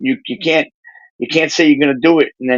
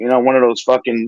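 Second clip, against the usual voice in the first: usual speaking voice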